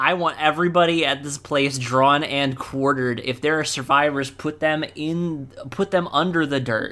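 plain

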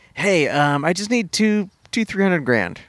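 play-acted oddly cheerful, upbeat, breezy, casual tone. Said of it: "weirdly upbeat the whole time".

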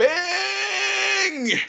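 screaming. Calling to an ally while sliding toward a dragon: screaming. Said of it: "I'm screaming".

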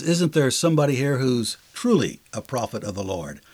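ordinary talk, nothing marked

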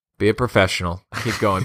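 normal talking voice

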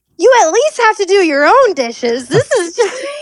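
acted fed-up yell. Retelling what he yelled from the kitchen, imitating a yell. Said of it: "he yells out from the kitchen".

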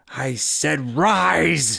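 high, rough, creaky hiss with a drawn-out rise. A woman holding a wand to a man's throat orders him: hissing. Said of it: "she hissed".

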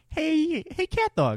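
high-pitched cartoon rat voice. Friends recall the rat from CatDog, and one tries the voice: Winslow voice. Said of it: "I know exactly what that voice sounds like now".

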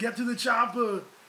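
big, loud action-hero growl. Urging a friend to do an accent, showing an Arnold Schwarzenegger impression. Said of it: "Do like Arnold Schwarzenegger like this".

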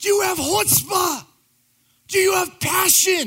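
very loud, high-pitched, fired-up screaming. Recounting a fired-up man at 5 a.m., retelling someone screaming. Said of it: "he starts screaming at me".

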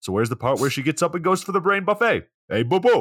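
put-on New York Italian accent with swinging pitch. Quoting an FBI character from a show, in an Italian New Yorker Yogi Bear voice. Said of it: "like an Italian New Yorker mixed with like Yogi Bear".

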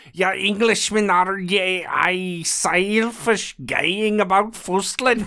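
mock Scottish woman's accent. Reading an angry quote from a book, asked for: Scottish woman's accent. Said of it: "if you can pronounce the Scottish woman's accent here".

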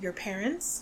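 softly spoken. Retelling a book scene, quoting one character's question to another, said quietly. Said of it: "Dumbledore says quietly".

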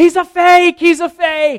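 very high, very loud, slow, shrill, drawn-out declaiming. Retelling a movie scene, imitating Buddy the Elf declaring loudly. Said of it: "declares to everyone in the room".

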